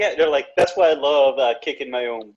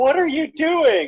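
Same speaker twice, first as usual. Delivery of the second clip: put-on, very high, panicky, freaked-out outburst; 13 semitones higher than usual. Retelling a movie bathroom scene where a guy walks in: imitating someone freaking out. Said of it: "he's all freaking out".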